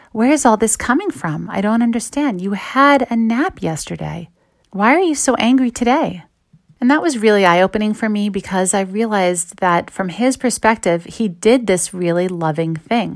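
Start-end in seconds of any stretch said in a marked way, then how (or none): 0.1-6.2 sincere, genuinely confused, bewildered, puzzled tone. Retelling what a husband asked his wife: imitating someone sincerely confused. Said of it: "very genuinely and sincerely confused".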